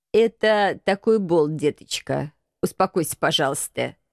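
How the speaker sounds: said dryly. Reading agent 013's reply to the pleading wife, as a dry remark. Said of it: "сухо отметил агент 013".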